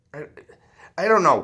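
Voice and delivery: stammering start, tripping and repeating on "I". Addressing listeners directly, the speaker breaks off mid-thought, stuttering. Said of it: "I'm stuttering".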